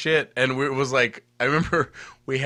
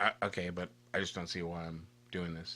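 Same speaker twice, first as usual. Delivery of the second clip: acted, unimpressed, rude, dismissive tone; 8 semitones lower, 15 dB quieter than usual. Retelling how an arcade owner grudgingly signed their records: imitating a rude, dismissive man. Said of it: "he's total dick".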